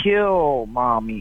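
mock-wicked small talking-doll voice. Retelling what a talking doll said when its string was pulled: imitating an evil little voice. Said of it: "in an evil, little, wicked voice".

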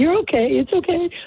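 nervous, very high coaxing tone. Mimicking a dog owner who makes their dog nervous, imitating a high-pitched nervous voice. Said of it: "Like this high-pitched nervous voice".

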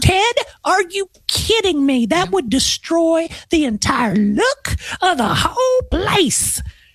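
very high-pitched voice. Retelling what a client's wife would say about a grab bar, imitating a client's wife. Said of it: "I'm using his, his wife's voice in this thing".

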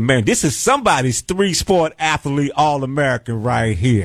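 ordinary talk

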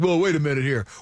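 sheepish, protesting tone. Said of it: "the local guys kinda sheepishly are like".

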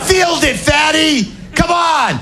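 loud yelling.

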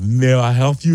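put-on Russian accent. Retelling how a man who was welding looked up and spoke, russian accent. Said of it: "Like a real like kind of like Russian accent".

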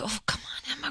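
very quiet mutter to oneself under the breath. Retelling cheering at swim meets: imitating own muttering under breath. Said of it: "under my breath".

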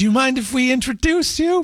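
meek little voice. A speaker retells asking the man at the door, retelling a meek college-student voice. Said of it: "in my meek little college student voice".

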